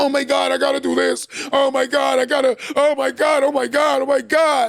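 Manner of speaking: whiny complaining. Mocking how men talk when they complain: imitating men complaining. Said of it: "all they do is complain".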